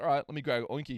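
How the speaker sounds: ordinary delivery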